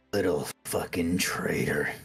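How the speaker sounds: snarling voice. Narrating a man walking past Grix on the dock, snarling. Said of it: "you hear him kind of snarl to you".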